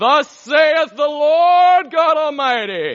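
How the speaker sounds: loud, slow, weird booming prophet-of-thunder voice. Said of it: "not use a weird voice".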